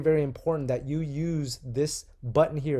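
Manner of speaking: ordinary talk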